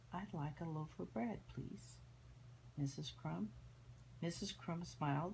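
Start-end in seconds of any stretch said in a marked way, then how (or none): 0.1-3.5 toned-down, soft, quiet, mild-mannered voice. Narrator reads Mister Noisy asking Missus Crump for bread: said quietly. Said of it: "and then he was said quietly".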